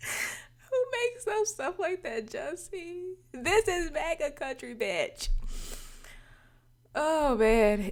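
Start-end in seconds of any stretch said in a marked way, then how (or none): 3.3-7.9 talking through laughter, higher and louder. Reacting to a story that seems fake: laughing while talking. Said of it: "If I could stop laughing".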